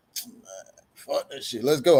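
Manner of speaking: low mutter under breath. Retelling own words when asked to agree: imitating muttering under breath. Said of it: "I'm saying it up under my breath".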